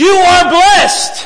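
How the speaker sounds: piercing, full-volume, shrill, high shouting. Acting out a greeting in a living room, the reply: shouted loudly. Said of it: "She's shouting at Mary".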